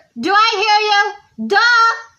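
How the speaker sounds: rowdy, loud, hyper, high-pitched shout, drawn-out "I". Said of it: "I'm just being loud".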